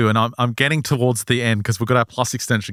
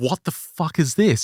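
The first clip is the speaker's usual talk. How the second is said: put-on yelling, slower; 7 semitones higher than usual. Retelling a woman in the stands starting to yell, imitating someone yelling. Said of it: "And she starts yelling".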